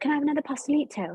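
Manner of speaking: put-on poor British accent. Recalling practicing Orion's dialogue around the house, in the worst British accent ever. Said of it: "the worst British accent ever".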